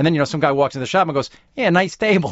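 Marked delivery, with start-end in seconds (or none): 1.5-2.3 put-on dopey New England accent, pitched up. Retelling what some guy walking into the shop says, in a dumb New England accent. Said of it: "we both use as shorthand for dumb the New England accent".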